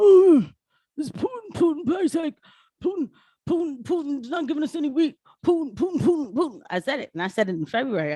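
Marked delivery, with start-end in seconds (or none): 0.0-6.6 put-on pitched-up old husk of a man voice. Mocking what the old man says whenever something goes wrong: imitating an old man. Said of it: "the old man, the old husk".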